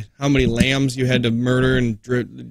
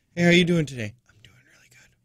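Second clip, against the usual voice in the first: pretend whispering, higher pitch; 5 semitones higher than usual. Acting out trying the whisper trick at a gas station: pretend whispering. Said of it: "Why are we whispering?".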